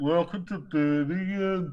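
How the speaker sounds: put-on Birmingham accent. Retelling the station announcement heard on arrival, mock birmingham accent. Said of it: "I'm just taking a piss out of their accent".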